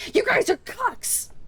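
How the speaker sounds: acted very high-pitched squeaky yelp. Imagining a new viewer arriving to the stream: imitating own screaming. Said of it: "and I'm screaming".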